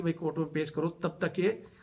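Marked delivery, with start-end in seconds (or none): none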